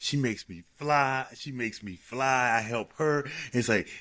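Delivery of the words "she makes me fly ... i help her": plain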